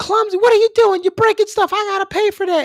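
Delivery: put-on high-pitched, shrill, furious scolding yell. Retelling a mother scolding a clumsy kid at a funeral home: imitating mom yelling angrily. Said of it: "my mom started raising hell".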